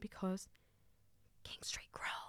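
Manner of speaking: whispered. Telling listeners about events in Sydney this week, whisper. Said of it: "I had to whisper that so I wouldn't shout it".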